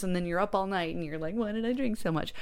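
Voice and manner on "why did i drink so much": plain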